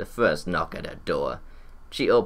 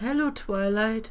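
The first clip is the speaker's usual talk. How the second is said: soft-toned, very high pitch. Fluttershy greets twilight at the door, speaking in a soft voice. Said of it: "Fluttershy said in a soft voice".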